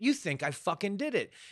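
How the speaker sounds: weak, feeble, half-hearted freak-out, pitched high. Retelling a dad suspected of killing his daughter, acting out a weak freak-out. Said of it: "he has a very weak freak out".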